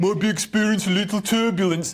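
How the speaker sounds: terrible, clumsy put-on Birmingham accent. Showing off his range, acting out an announcement over the tannoy in a bad Brummie accent. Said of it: "was that Brummie?".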